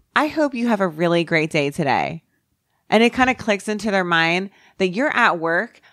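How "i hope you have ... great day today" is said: pointed, sugary sing-song sarcasm. Retelling a reply to a curt worker at a coffee place: imitating own sarcastic tone. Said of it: "I'll sarcastically be like".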